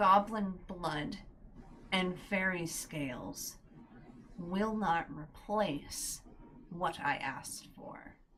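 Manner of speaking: whispered hissing, broken mid-phrase. Storyteller voicing a voice bubbling up from burning ash, hissing voice. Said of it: "a hissing voice bubble up and says".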